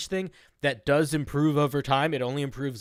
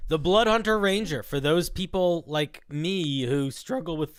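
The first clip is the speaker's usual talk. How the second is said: soft voice, cracking slightly mid-phrase; 2 semitones higher than usual. Starting to present the Blood Hunter Ranger, voice cracking a little. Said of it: "my voice just cracked a little bit".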